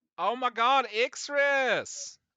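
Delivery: put-on very high, very loud country Southern accent. Narrator voicing an enormous being who cries out to ixris, in a country southern down-home voice. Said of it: "real country, southern, down home voice".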